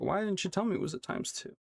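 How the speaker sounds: ordinary delivery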